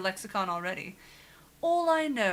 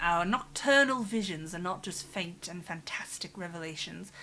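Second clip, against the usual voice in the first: deliberately bad, put-on British accent. Reading a note aloud from the game in a bad british accent. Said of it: "gotta do it in the bad British accent".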